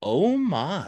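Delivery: bemused, mildly exclaimed, with amused bewilderment. Retelling to the listener what George said to them: George, mock-bemused. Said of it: "says to you in a kind of a bemused fashion".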